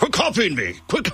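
put-on old-school 1980s news reporter voice. Quoting the oldest sibling talking to the youngest, in a 1980s news journalist voice. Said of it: "he sounds like a 1980s news journalist".

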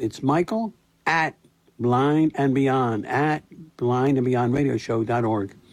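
slow, deliberate, drawn-out delivery.

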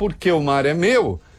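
ordinary delivery

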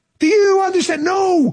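incredulous, disbelieving voice.

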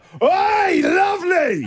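put-on very high, shrill hollered yell. Retelling calling out of the car window to a woman, retelling a yell. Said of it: "I yelled out".

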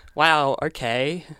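sarcastic, mocking tone. Showing the next round's manner for the line: sarcastic. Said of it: "We're up to sarcastic".

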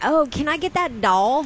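put-on very thick, high-pitched country accent. Telling Babs what Baby Babs asked today, in Baby Babs's country accent. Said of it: "the most country accent ever".

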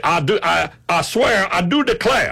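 high cartoonish voice. Speaker says what he'll say when confirming his name at early voting, Foghorn Leghorn voice. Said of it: "Foghorn Leghorn".

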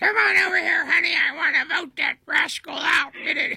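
lady voice pitched very high. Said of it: "the church lady voice".

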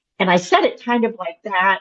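ordinary talk

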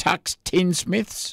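very slow, careful, drawn out word by word, slightly high. Reading out a list of collections, saying one name very slowly. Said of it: "I had to say that very slowly".

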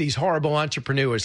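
ordinary talk, nothing marked

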